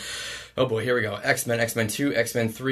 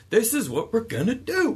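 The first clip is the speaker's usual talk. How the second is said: loud, commanding, high and swooping pitch; 11 semitones higher than usual. Describing a character who gets heroes to work together, doing a loud, commanding Sam Jackson voice. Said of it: "he just has this loud, commanding voice".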